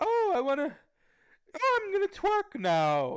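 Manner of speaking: very high, flamboyant, stretched-out, swooping cartoon voice. Mocking how a guy sounds to the others, do a Snagglepuss voice. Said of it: "He sounds like Snagglepuss".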